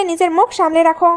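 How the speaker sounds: ordinary delivery, nothing marked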